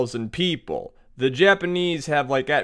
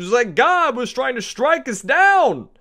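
put-on New Jersey accent, higher and louder; 9 semitones higher, 4 dB louder than usual. Voicing a Mongol soldier reporting a typhoon to his boss: put-on Jersey accent. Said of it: "your Mongols speak with, like, a, a Jersey accent".

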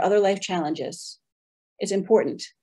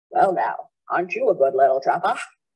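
put-on heavy Maine accent, laid on thick throughout; 5 semitones lower than usual. Retelling a wildlife specialist's congratulations on trapping: imitating a thick Maine accent. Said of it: "He had a very thick Maine accent".

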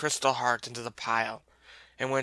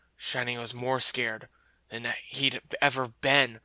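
usual speaking voice

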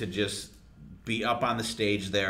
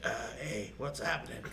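soft, worn-out, beat-down voice. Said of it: "you're just like".

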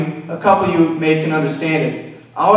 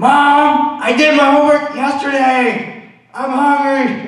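high, slow hollered yell with one long-drawn word; 9 semitones higher than usual. Retelling how a friend yelled back at his mom: imitating a friend yelling. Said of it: "he would just sit there and just yell".

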